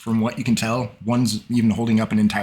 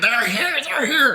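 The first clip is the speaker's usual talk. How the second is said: very high, shrieking goblin scream. A game master voices a goblin in the scene, goblin screaming. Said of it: "he's screaming".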